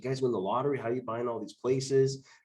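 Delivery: ordinary talk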